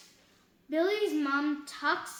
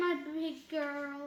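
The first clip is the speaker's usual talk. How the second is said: usual speaking voice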